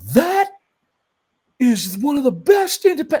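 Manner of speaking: very high, loud, excited and angry at once. Retelling how a man came out of a private screening, imitating someone happy-angry. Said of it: "He was like happy angry".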